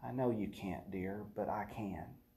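still, gentle, very hushed, low voice. Voicing what he says to those wrapped up in hurt, still, gentle, quiet. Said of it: "that still, gentle, quiet voice".

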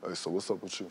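fake deep manly voice. Joking with a friend about acting manly, using a fake manly deep voice. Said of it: "I'm gonna get manly".

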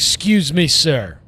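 acted, very forceful, pushy, loud, high voice. Retelling how a guy walked up in Chipotle: imitating a forceful address. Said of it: "very forcefully".

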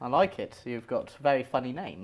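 normal talking voice

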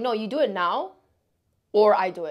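usual speaking voice

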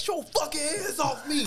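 play-acted shrill yelling with the pitch way up. Retelling being choked by a security guard, retelling a yell. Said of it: "I start yelling".

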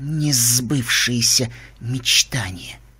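hissing voice. Reading a story, the narrator voices the female interlocutor's reply, hissed. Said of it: "прошипела собеседница".

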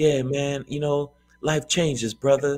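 soft, calm whispering. Retelling the acquaintance's calm reply: imitating someone whispering calmly. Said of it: "Why are you whispering?".

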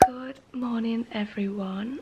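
speaking quietly. Greeting viewers early in the morning, speaking quietly. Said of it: "I'm speaking really quiet because it's so early".

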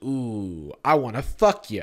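acted seductive voice. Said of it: "he does little sexy eyes".

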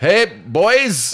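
put-on loud, high-pitched Scottish accent. Imitate your old headmaster from Westlake Boys High School, as a Jim Dale impression with a Scottish accent. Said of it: "My school was a short Scotsman".

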